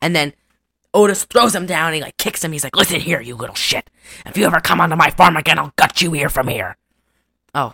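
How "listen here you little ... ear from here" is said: put-on menacing killer voice. Retelling a farm owner's threat from a movie: Ghostface voice. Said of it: "I just went whole ghost face".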